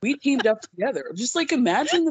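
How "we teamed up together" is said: put-on deep, businesslike female executive voice. Retelling a man's pitch in an Elizabeth Holmes voice. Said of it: "like true Elizabeth Holmes style".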